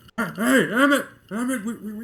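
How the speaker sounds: high, loud yell, projected far. Voicing an innkeeper calling to the back of the bar: innkeeper yelling to the back. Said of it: "yelling to the back".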